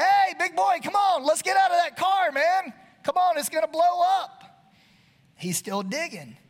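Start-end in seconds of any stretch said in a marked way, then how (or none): 0.0-4.4 high, loud, urgent hollering. Retelling a car fire, re-enacting own yell at the man in the car. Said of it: "So I'm yelling at him".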